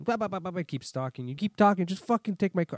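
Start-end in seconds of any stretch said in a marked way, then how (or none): 1.3-2.8 fed-up, loud angry snap, temper gone. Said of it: "Then I snapped".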